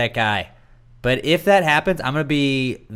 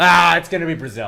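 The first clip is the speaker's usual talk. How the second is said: loud, cocky, dismissive brush-off. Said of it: "cocky little assholes that were just like".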